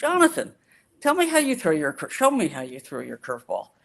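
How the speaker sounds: put-on very sweet, gentle, swooping sing-song. Retelling what Sandy said to a boy: imitating Sandy speaking very sweetly. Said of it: "Sandy looks at him very sweetly and says".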